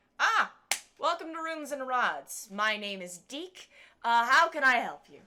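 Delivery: loud, high-pitched halfling shopkeeper voice. Voicing a halfling shopkeeper greeting a customer: Deke the halfling voice. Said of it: "halfling comes from kind of a back room".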